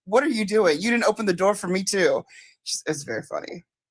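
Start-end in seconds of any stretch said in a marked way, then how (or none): 0.1-2.2 put-on scolding, lecturing tone. Retelling how someone lectured Jack: imitating someone lecturing. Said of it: "lecturing Jack and telling him".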